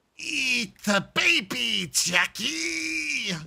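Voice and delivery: absurd, angry, very high, rasping, screeched, drawn-out evil voice. Describing an absurd game voice they've tried, the speaker performs it: The Darkness voice. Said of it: "insanely fucking weird voice like that".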